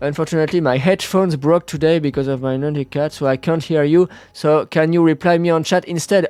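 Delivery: English spoken in a French accent. A French streamer addressing a viewer in English, French-accented English. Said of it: "mon accent anglais".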